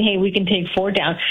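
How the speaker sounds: plain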